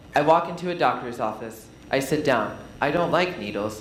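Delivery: flat, lifeless, boring monotone reading. Showing how the same words can sound boring: flat, lifeless delivery. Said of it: "it sounds really boring. It sounds dead".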